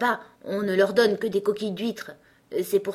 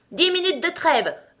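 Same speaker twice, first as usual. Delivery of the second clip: high, shouted voice; 8 semitones higher, 4 dB louder than usual. The king calls out to the lion and unicorn as their fight ends: shouting. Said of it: "pendant que le roi criait".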